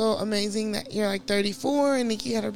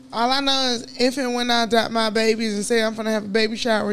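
ordinary delivery

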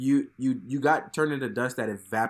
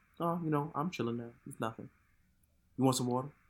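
put-on nonchalant villain voice, quieter; 8 dB quieter than usual. Retelling how comic book Thanos acted after wiping out the universe: imitating comic book Thanos, nonchalant. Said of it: "He was so nonchalant about it".

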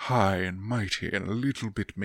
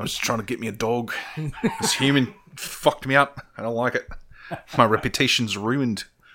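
loud, good, fully in-character put-on Australian accent; 3 semitones higher, 5 dB louder than usual. Playing an elf character in the game, the speaker talks in an australian accent. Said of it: "good australian accent".

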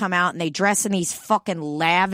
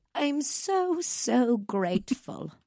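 put-on old-fashioned transatlantic voice, higher and quieter; 5 semitones higher, 6 dB quieter than usual. Retelling a friend's speech done as Audrey Hepburn: imitating Ruth doing Audrey Hepburn. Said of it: "she almost sounds like an old lady in that speech".

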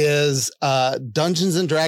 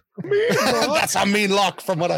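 bad put-on Scottish accent, pitched up; 5 semitones higher than usual. Joking during a guessing round about a village in scotland, terrible scottish accent. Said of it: "that was my terrible Scottish accent".

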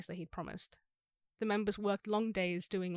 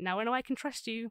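words broken up by laughing while talking; 3 semitones higher than usual. Retelling what he said once they weren't dead: imitating someone laughing while talking. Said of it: "he would start laughing".

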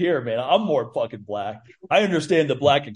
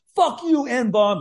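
loud, raving yell, higher pitch; 10 semitones higher than usual. Retelling a neighbor yelling at a football game: imitating someone yelling loudly. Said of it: "yelling it out like a raving lunatic".

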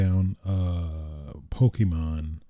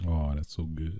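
ordinary talk

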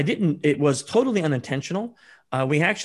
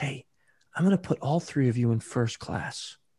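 hushed, quieter whisper; 4 dB quieter than usual. Retelling an offer to move them all to first class: imitating a whisper. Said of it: "whispers right up to us".

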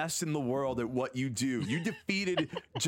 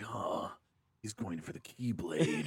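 low, hushed, whispered murmur; 7 semitones lower, 4 dB quieter than usual. Mocking a group of sexy anime guys, imitating low-toned talk. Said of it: "just talking in low tones".

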